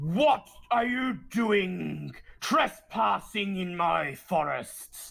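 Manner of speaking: indignant roar, reined in and contained. Narrating a game, voicing an unseen forest dweller confronting the players, loud roaring voice. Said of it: "a loud voice roars".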